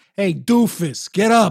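put-on New York accent. Suggesting voices for a nagging robot, the speaker demos a New York accent. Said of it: "Just get like a real New York accent".

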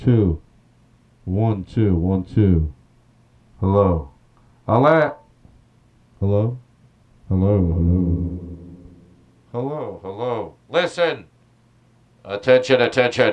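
very slow, low, drawn-out bullhorn voice. A speaker pretends to use a bullhorn at the supermarket, in a bullhorn-like voice. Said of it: "This will sound somewhat like a bullhorn".

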